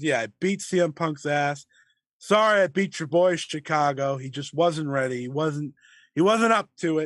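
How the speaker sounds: usual speaking voice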